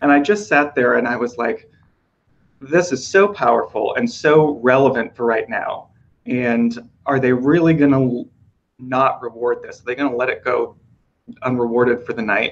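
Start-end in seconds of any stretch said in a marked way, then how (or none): none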